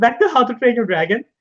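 cracked voice breaking up high. Returning to the film discussion mid-sentence, voice cracking. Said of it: "My voice just cracked over there".

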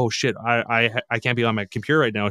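put-on panicked voice. Retelling how his buddy reacted after being scammed, imitating a panicked friend. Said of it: "he got all panicked".

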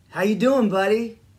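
imitated hard Midwestern accent. Retelling how the uncle greeted him: imitating a hard Midwestern accent. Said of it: "in his hard Midwestern accent saying".

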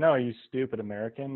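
ordinary talk, nothing marked

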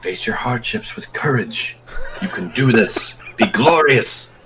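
whispering. Ushering a frightened companion forward in a game scene: whisper. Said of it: "I'm gonna whisper".

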